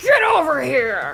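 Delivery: put-on fighting game character shout. Shouting a Mortal Kombat line during a sound quiz: Scorpion voice.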